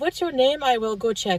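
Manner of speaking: fast mock French Canadian accent. Telling a story and doing an impression of a hospital volunteer, imitating a French Canadian accent. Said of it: "I'm just going to try to imitate it".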